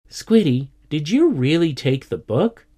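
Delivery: aghast, horrified and disbelieving. The narrator turns to Squiddy, asking in horror. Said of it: "I asked in horror".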